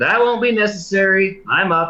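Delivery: light high called-out voice. Offered a message relay after being disturbed, a player's character shouts back. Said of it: "I will shout".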